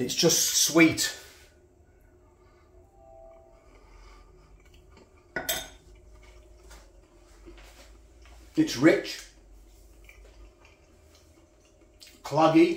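very slow, chewed, mouth-full mumble. Reviewing a sweet food while eating it, talking with mouth full. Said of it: "Apologise for talking with my mouth full".

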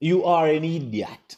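slow, put-on Nigerian accent. Telling followers of so-called spiritual fathers they are idiots: Nigerian accent. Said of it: "in a Nigerian accent".

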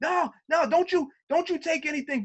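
mock screaming with the voice thrown very high. Retelling a coworker screaming at them in a station: imitating someone screaming. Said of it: "he's screaming".

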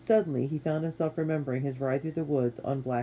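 ordinary delivery, nothing marked

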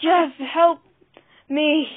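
very loud, high-pitched, gasped-out cry. Narrator reads a squeezed dog's line as he collapses, gasped. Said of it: "he gasped".

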